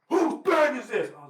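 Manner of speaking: shrill, piercing shout, very high and loud. Telling how their bag was lifted into the sky, retelling a yell. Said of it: "the worst part is they're yelling".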